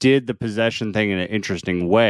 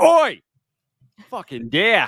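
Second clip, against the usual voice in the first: put-on Australian accent, swinging very high; 10 semitones higher, 3 dB louder than usual. Joking about a scene where they hit a deer: Crocodile Dundee Australian accent. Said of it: "go like Crocodile Dundee with it and just be like".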